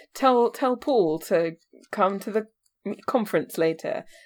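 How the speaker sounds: usual speaking voice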